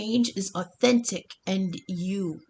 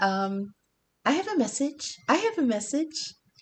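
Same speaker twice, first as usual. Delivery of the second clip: tiny, sweet, cute little ghost voice; 5 semitones higher than usual. Tarot reader retelling a voice heard while shuffling the deck: cute little voice. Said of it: "I heard this cute little voice saying".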